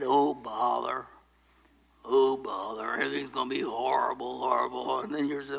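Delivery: mopey cartoon donkey voice. Mocking gloomy talk with a cloud overhead: gloomy Eeyore voice. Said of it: "you're like Eeyore in the Winnie the Pooh show".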